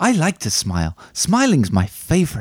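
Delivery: sloppy, off-the-mark put-on character voice. Giving a film quiz clue by acting the quote: bad Buddy the Elf impression. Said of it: "the actual impression bit that, that's really bad".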